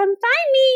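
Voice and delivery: very high, teasing, pitched way up. Retelling a funny pre-tape sketch line in Beck's voice. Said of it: "Beck's voice".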